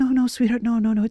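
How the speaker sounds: put-on sweet soothing tone. Describing stopping someone reaching for an electrical socket, the speaker acts it out; putting on a nice gentle voice. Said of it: "in a g- nice gentle voice".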